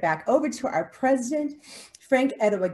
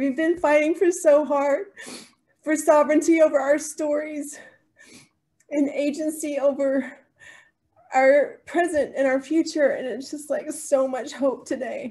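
speaking through tears, crying; 5 semitones higher than usual. Kimberly, co-hosting a live talk, thanks a guest for sharing, crying while talking. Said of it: "I'm just crying again".

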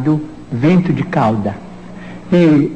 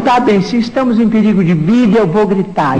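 usual speaking voice

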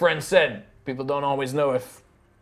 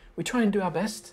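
higher-pitched little lady voice; 6 semitones higher, 3 dB quieter than usual. Narrating a game scene, voicing a little Warforged lady greeting guests. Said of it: "the little Warforged lady is like".

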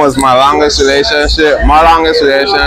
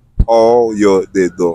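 slow pronunciation; 6 semitones lower, 3 dB quieter than usual. Teaching listeners to say a Creole greeting, said slowly. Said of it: "we're going to say it slow".

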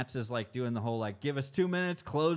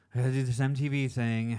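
put-on bored tone; 4 dB louder than usual. Teasing someone for sounding bored, the speaker mimics them mock-bored. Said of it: "you're saying it with such boredom in your voice. Like this".

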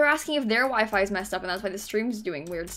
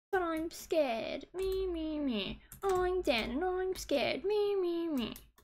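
high, very slow, stretched-out, drawn-out voice; 8 semitones higher, 7 dB quieter than usual. Mocking another player who just said he is scared: imitating Dan. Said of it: "That's what he sounds like".

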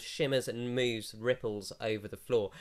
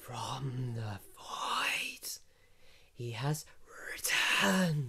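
otherworldly, swooping voice phasing in and out; 3 dB quieter than usual. Speaker relaying what the voices say, in a voice phasing in and out. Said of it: "It sounds like it's phasing in and out of reality".

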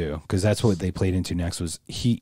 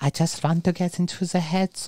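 put-on high, cute little voice with German accent. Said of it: "cute little Germanic voice".

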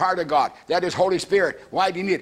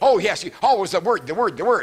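put-on sarcastic, mocking male voice. Retelling what a man said to a brother: imitating a sarcastic man. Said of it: "that man got very sarcastic".

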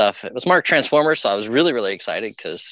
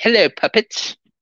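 very high, put-on English accent in a puppet voice; 12 semitones higher, 3 dB louder than usual. Showing how the puppets talked to the girls at lunch: nifty put-on english accent. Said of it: "Even had a nifty English accent".

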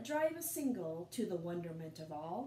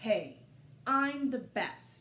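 loud, very slow, drawn-out growl; 2 semitones higher, 6 dB louder than usual. Narrator reading a character's line in a story, growling. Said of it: "he growled".

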